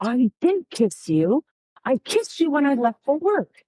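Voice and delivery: passionate, heated, insistent delivery. Recounting an argument, quoting what he said back, retelling a passionate reply. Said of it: "he was also passionate in his response".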